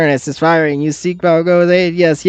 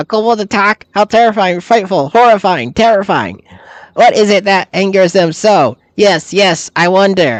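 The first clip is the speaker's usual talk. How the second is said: put-on kobold monster creature voice; 3 semitones higher than usual. The speaker voices the kobolds: kobold creature voice. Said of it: "I wasn't intending to do that voice for the kobolds".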